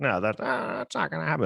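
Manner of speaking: put-on rough, creaky classic old-Hollywood film star voice. Imagining an old actor's reply about an Oscars punch: Jimmy Stewart impression. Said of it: "That's my Jimmy Stewart impression".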